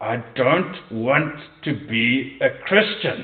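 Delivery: strained, forced out through gritted teeth. Telling a story, voicing a man answering John, retelling words through gritted teeth. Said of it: "through gritted teeth".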